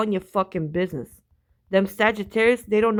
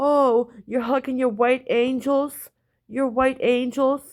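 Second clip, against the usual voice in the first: sarcastic, mocking, teasing ribbing tone; 4 semitones higher than usual. Retelling teasing him about his hugging: retelling own mocking taunt.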